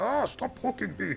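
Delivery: very high-pitched put-on orc creature voice. Voicing one orc's line, put-on orc voice. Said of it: "if we do it in the orc voice".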